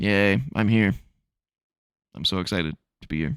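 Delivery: put-on bored, flat voice. Retelling an entrance, imitating a disinterested Trump. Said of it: "Trump looked completely disinterested during his entrance".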